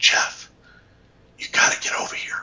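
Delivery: sly, hushed, breathy whisper. Retelling a phone call from one of the assistants, imitating a whisper. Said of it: "like whispering".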